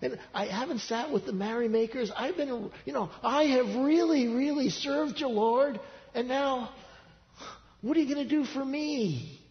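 mock high, slow, drawn-out whine, "me" stretched. Speaker acting out a prophet's words to the lord, mock-whining. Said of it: "there's a slight tone of whining here".

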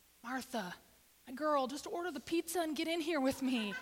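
earnest, pleading, begging tone. Acting out how he might plead with Martha: imitating someone pleading. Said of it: "I think he's pleading with Martha".

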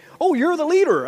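high, loud, awestruck exclamation of admiration. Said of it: "everybody just went".

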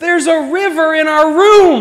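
very high, shrill, loud shout. Telling of the flooded dorm room, retelling the student's yell. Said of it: "And he yells".

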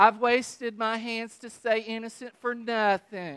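whiny voice. Reading a verse as he whines about everything: whiny complaining reading. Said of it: "That's how you have to read that verse".

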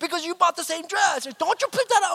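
very high-pitched scolding yell. Retelling how they started yelling at Virginia, reenacting own yelling. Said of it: "I started yelling at Virginia".

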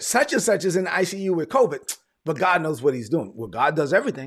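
ordinary delivery

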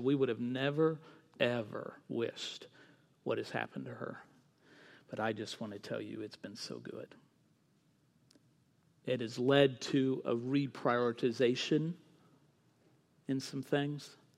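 very quiet, hushed, secretive half-whisper. Retelling what the mom said about her daughter: imitating a half-whisper. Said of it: "she kind of whispered this".

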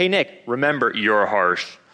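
acted deep announcer voice. Retelling what his dad used to tell him, in the Allstate ad voice. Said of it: "and so he'd do this".

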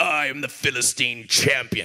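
deep, low storybook character voice. Reading a Bible story to a kid and doing voices, Goliath voice. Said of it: "Goliath comes out and I'm like".

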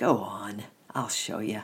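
ordinary delivery

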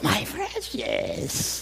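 whispered, possessive, covetous cave-creature voice. A speaker compares our culture to Gollum, in a Gollum impression. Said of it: "We're like Gollum on steroids".

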